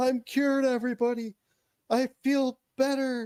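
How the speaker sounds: high, ecstatic, triumphant proclaiming voice. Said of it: "I'm like".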